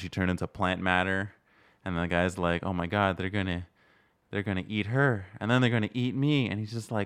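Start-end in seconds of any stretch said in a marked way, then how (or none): 2.6-6.5 mock flat, boring, deadpan monotone bad acting. Speaker describing a movie scene, quoting an actor's line: imitating flat, boring delivery. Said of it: "Like that kind of flat boring".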